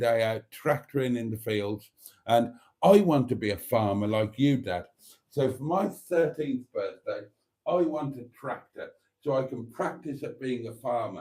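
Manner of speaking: plain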